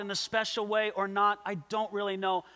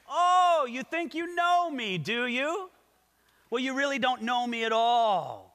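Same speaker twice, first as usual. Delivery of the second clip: put-on sarcastic tone, pitched higher; 3 semitones higher than usual. Explaining a Bible verse, paraphrasing Jesus's reply, retelling Jesus sarcastically. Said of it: "the first sentence of Jesus' reply here may very well have been sarcastic".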